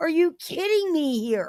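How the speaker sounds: angry, worked up, high and swooping pitch. Calling out someone for what they did: angry, pissed off. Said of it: "I'm getting really pissed off".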